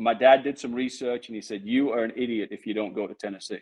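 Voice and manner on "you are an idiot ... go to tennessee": normal talking voice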